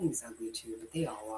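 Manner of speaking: hushed whisper. Chatting with another speaker for a YouTube video, whispering. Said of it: "You're whispering".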